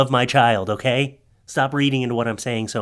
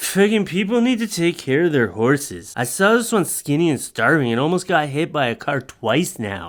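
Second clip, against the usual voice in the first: put-on drunk voice, boozy rant; 3 semitones higher than usual. Speaker doing a joking bit, in a drunk-person voice. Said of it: "I did the voice as a drunk person".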